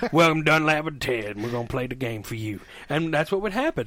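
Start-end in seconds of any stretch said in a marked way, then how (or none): 0.1-2.6 put-on drawling Southern accent. Retelling how they greeted people while gaming: imitating a Dixieland Southern accent. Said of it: "in a full, like, Dixieland Southern accent".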